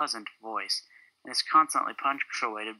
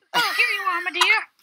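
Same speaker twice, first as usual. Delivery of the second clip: high-pitched cartoon mouse voice; 6 dB louder than usual. Reading a scripted scene's lines aloud, sounding like Mickey Mouse. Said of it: "You sound like Mickey Mouse".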